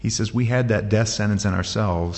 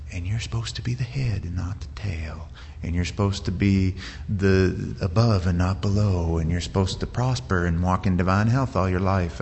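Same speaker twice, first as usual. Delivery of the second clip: put-on, very pleasant, nice-sounding TV voice. Speaker contrasts someone on TV with Paul, imitating a really nice TV voice. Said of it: "somebody in a really nice voice saying".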